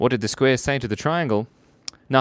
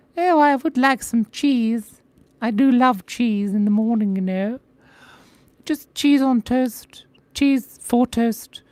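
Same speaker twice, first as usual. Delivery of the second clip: tiny, very high-pitched, squeaky mouse voice; 12 semitones higher, 4 dB louder than usual. Voicing a cute little mouse character, in a high little mouse voice. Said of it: "he's got a high little voice like this".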